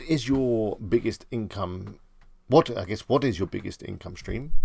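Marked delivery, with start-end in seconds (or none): none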